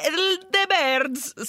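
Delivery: high, slow, badly done Italian accent. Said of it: "that was really bad Italian accent".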